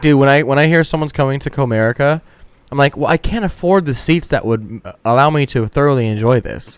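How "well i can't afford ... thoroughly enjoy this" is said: normal talking voice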